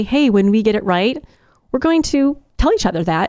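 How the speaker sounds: usual speaking voice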